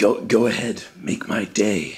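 low, slow, deliberate, unhurried, measured delivery. Doing an impression for others to guess: Clint Eastwood impression. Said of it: "Clint Eastwood".

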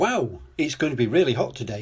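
ordinary delivery, nothing marked

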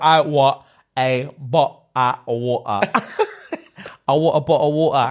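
put-on mock English Cockney accent. Retelling TikTok videos reading out English accents: put-on Cockney accent. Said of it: "what it would sound like in Eng-, English accent".

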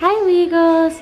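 slow, high-pitched cooing voice.

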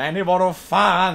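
annoyed, irritated, exasperated exclamation. Demonstrating a Swedish expression for the listeners, say it as an annoyed exclamation. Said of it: "I'm so annoyed".

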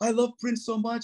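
high, sobbing so hard words barely come. Retelling what a woman they invited in said: imitating someone crying hard. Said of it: "She was crying so hard".

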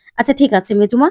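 ordinary delivery, nothing marked

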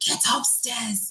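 breathy, hushed whisper. Retelling how a mother shouted at a visitor: imitating mom shouting. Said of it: "She's just shouting at him".

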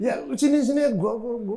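keen, high-pitched delivery.

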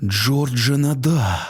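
frightened gasp. A policeman at the studio entrance recognizes George and blurts his name; frightened gasp. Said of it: "злякано видихнув він".

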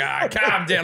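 put-on rough Australian manner of speaking. Retelling own reply to an impostor: retelling a rough Australian manner. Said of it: "I was being all rough Australian".

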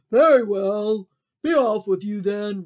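loud, roaring, bellowing troll voice. Reading the Billy Goats Gruff story aloud, voicing the troll: roaring troll voice. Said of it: "I need to sound like a troll".

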